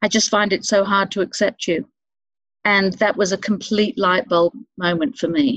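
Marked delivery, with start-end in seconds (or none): none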